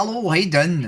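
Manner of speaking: put-on Irish accent. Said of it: "it's Irish accent for the rest of the stream".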